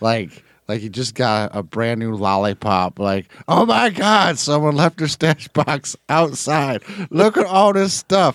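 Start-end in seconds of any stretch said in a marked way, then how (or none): 3.5-8.3 mock giddy, pitched-up, childlike glee. Retelling a game session, the speaker imitates Roy with mock childlike giddiness. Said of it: "with like this like childhood giddiness".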